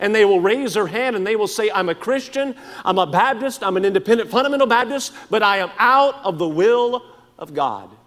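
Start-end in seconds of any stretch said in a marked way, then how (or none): 1.7-7.9 put-on unabashed, defiant, bold, brazen tone. Imitating people who openly admit defying god, imitating a bold, brazen declaration. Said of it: "as bold and as brazen as they can be".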